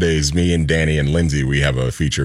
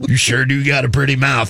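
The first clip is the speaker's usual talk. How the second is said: creepy put-on Southern accent, higher; 8 semitones higher than usual. Quoting a creepy line after recalling the movie Deliverance. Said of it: "that movie Deliverance".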